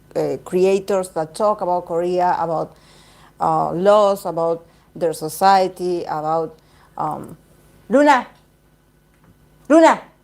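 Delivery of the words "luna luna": loud, high shout carried across the room. Breaking off from talking to the audience to call the cat, shouting to a cat. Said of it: "I'm shouting to my cat".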